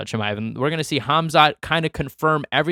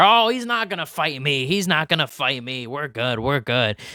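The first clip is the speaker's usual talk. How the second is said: mock-sarcastic, put-on sarcastic delivery. Speaker repeats another man's remark about fighting him, retelling a sarcastic remark. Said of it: "that is pretty loud sarcasm there".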